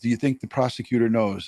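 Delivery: ordinary talk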